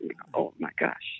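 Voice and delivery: soft, breathy, awed whisper.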